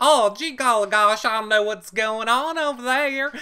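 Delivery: sugary, polite Southern tone. Retelling how these people talk one day: imitating a sweet southern voice. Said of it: "these people can be like".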